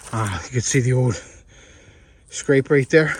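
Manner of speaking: winded, out of breath. Speaker showing viewers a clover plot after walking up a big hill: winded. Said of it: "Sorry guys, I'm winded. Just walked up a big hill".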